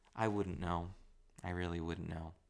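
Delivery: soft, gentle, kind, courteous, polite tone. Language lesson on how tone changes what you get across: soft, kind, polite tone. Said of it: "Very kind, very polite, very soft. ... Just like that".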